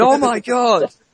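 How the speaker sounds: high-pitched, outraged voice.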